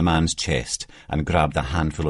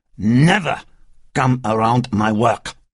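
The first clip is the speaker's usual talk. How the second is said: put-on loud, heavy French accent, drink-slurred words; 7 semitones higher, 6 dB louder than usual. Narrating a drunk man kicking another man in an alley; drunk, heavy french accent. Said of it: "his heavy French accent rendered almost unintelligible by half a bottle of vodka".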